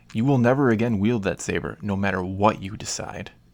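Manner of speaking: usual speaking voice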